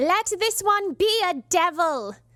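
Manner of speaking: put-on English accent. Asked whether they skipped the English accent, speaker redoes the line in an English accent. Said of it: "Is that better?".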